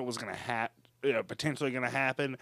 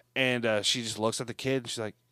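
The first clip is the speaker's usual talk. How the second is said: ordinary delivery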